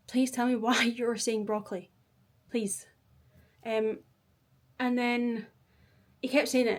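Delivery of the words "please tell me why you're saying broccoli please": mock fed-up, irritated, annoyed, exasperated tone. Retelling own words to someone who kept repeating a word: retelling own annoyed words. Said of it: "I was getting really annoyed".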